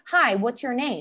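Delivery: acted pushy, aggressive voice. Retelling how a stranger pushed for the speaker's name, mimicking an aggressive stranger. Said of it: "I've had people be very aggressive".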